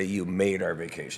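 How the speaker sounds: ordinary delivery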